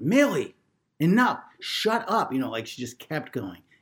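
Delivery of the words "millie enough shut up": mock very high-pitched, shrill yelling. Retelling the wife yelling at the dog whining at the door, retelling a yell. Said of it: "kept yelling".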